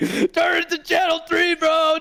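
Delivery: put-on, very high, drawn-out hollering shout. Retelling how a neighbor in a movie shouts through the wall: imitating a shout. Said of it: "you just hear him shouting".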